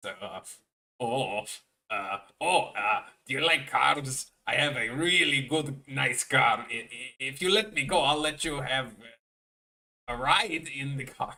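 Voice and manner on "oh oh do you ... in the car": slow, stumbling, cartoony video-game character voice. Imagining a captured character's plea said by Wario: Wario voice. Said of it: "could you imagine Wario saying that?".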